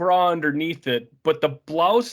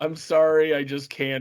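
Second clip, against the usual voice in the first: put-on deadpan delivery. Quoting a character's line from a fun episode, retelling a deadpan line. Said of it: "he says it so deadpan".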